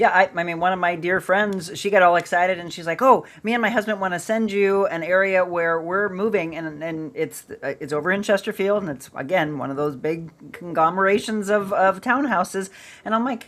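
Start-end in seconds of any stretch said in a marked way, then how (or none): none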